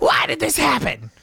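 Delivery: tiny, angry voice, very high-pitched, creaky and rough. Retelling a story about a short customer: imitating an angry little voice. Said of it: "the most angry little voice I've ever heard".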